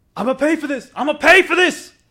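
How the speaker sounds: very loud, very high shouting yell. Retelling a story about a man at a store counter: imitating a man yelling.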